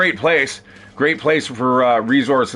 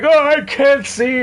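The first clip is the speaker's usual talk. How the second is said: put-on crying whimper, much higher pitch; 4 dB louder than usual. Retelling a hilarious bit of game voice acting, imitating the victim crying. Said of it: "and he's crying".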